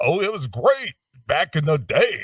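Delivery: high, swooping, big-voice radio announcer delivery. Retelling a radio interview: imitating a big-voice radio guy. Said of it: "he was doing the whole Big Voice Radio guy".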